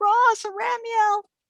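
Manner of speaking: frantic, desperate, very high-pitched yell. Voicing a distant character calling for two companions: desperate yell. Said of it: "Orkelia's very desperate sounding voice yelling".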